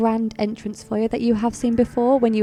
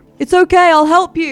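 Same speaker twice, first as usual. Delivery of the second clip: booming, very loud, high hollered shout; 6 semitones higher, 8 dB louder than usual. In a tabletop role-play, a character runs out of the gate, shouting. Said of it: "he shouts as he runs".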